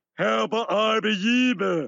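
mumbly, garbled nonsense cartoon gibberish. A character in the scene talks like the guy in Fat Albert. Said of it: "He's talking like the guy in Fat Albert".

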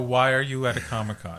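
ordinary talk, nothing marked

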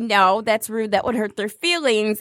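ordinary delivery

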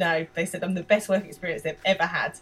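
ordinary talk, nothing marked

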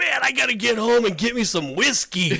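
mock, high, happy whooping celebratory shout. Retelling a gentleman's words after church: imitating a celebratory shout. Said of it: "he just shouts out".

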